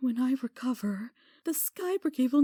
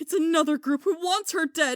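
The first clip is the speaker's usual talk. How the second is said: upset sudden outburst. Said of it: "Sky, calm down".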